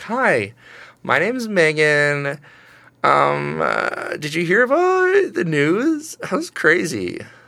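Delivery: fake casual everyday voice, very slow. Showing how a normal person sounds compared with a radio guy, in a fake normal-person voice. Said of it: "That's how they sound, all of them".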